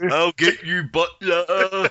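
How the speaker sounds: high comic zombie voice. Told that your zombie sounds like him, do a Blakey from On the Buses impression. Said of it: "your impression of a zombie sounds like Blakey from On the Buses".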